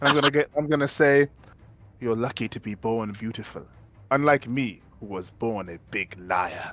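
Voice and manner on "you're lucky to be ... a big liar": hushed, secretive half-whisper, very close. Casting a spell in character, leaning to an enemy's ear: half-whispering in an ear. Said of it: "I'm gonna whisper in that fucker's ear".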